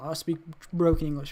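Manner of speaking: plain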